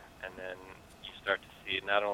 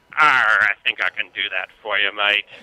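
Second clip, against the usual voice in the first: very loud, booming stage pirate voice; 15 dB louder than usual. Asked on the show for their best pirate impression, answering in a pirate voice. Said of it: "give us their best pirate impression".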